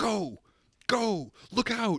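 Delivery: very high, very slow, drawn-out fake urgency. Retelling an audition scene, imitating Dick Ritchie acting intense. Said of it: "pretending like it's intense and being like".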